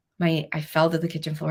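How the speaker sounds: ordinary delivery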